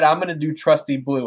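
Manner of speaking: ordinary talk, nothing marked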